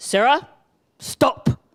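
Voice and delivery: put-on Ugandan-accented voice, firm and short. Retelling how Bernard told a stubborn girl to stop: Bernard's Ugandan voice. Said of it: "I just wanna use my Ugandan voice".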